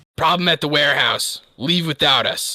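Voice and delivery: robotic, mechanized voice. A character calls out through his Gundam, voice robotic and mechanized. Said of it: "a little bit like robotic and, and mechanized".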